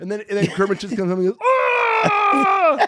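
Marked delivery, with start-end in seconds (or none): 1.4-2.9 furious, very high-pitched shriek, drawn out on Ah. Riffing on a fake movie trailer, imitating Kermit raging. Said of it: "So filled with rage".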